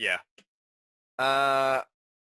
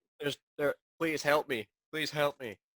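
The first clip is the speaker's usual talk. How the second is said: ordinary talk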